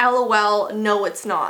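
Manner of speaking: plain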